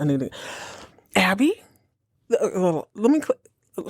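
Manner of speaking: slow, halting, stumbling stammer with false starts. Reacting in shock to a show's opening scene, stammering and stuttering. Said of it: "please forgive my stammering and stuttering".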